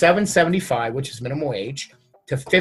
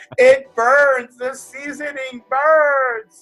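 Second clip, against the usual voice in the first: put-on very high, very slow, drawn-out wailing child howl; 10 semitones higher, 5 dB louder than usual. Retelling a joking story about feeding the son by slingshot: imitating screaming and yelling. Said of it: "All I remember was screaming and yelling".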